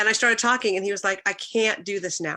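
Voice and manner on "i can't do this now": ordinary talk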